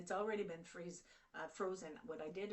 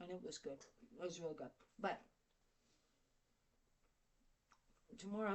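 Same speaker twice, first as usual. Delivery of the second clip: speaking with full mouth. Speaker describing a dish while eating it, talking with mouth full. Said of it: "so I got my mouth full".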